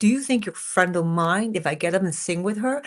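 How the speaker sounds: ordinary talk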